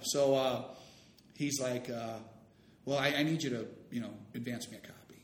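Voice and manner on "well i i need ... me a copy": normal talking voice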